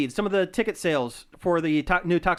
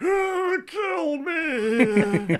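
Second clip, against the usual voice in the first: mock crying, higher pitch; 9 semitones higher than usual. Retelling a fake trailer where the melting cop begs: imitating someone crying. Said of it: "he's just crying in the background, going".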